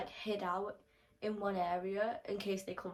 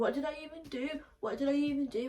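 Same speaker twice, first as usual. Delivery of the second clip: mock obnoxious, high and loud protesting tone; 6 semitones higher, 3 dB louder than usual. Retelling what an annoying boy said: imitating someone being loud. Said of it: "he's just being loud and he's being obnoxious".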